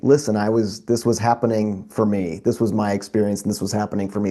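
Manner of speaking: ordinary talk, nothing marked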